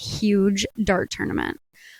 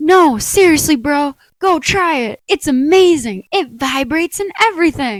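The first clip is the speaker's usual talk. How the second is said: put-on, high, loud, gushing, beaming excitement; 5 semitones higher, 5 dB louder than usual. Bartender retelling a customer recommending it to friends, imitating his excitement. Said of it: "still beaming like a kid on Christmas".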